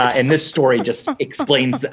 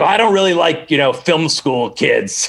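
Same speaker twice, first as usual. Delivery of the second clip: mock rough, gruff tone; 3 semitones higher than usual. Retelling a first phone call, imitating a gruff voice. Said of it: "really, like, gruff about it".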